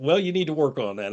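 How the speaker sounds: usual speaking voice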